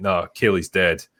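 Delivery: put-on flat, stone-dead delivery. Retelling how a character answers a concerned doctor: imitating a stone-dead delivery. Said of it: "he just stone dead just delivers the line".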